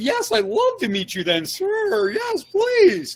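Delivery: very high, swooping, gushing, overeager pleading voice. Acting out a founder answering an investor's meeting request: imitating an overeager founder. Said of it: "the voice inflection is everything".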